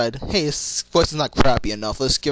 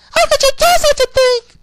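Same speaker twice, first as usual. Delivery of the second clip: very high, loud, shrill cry; 10 dB louder than usual. Comparing a character's voice in another show: imitating Cream's very high-pitched voice. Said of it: "even more high-pitched and probably break glass".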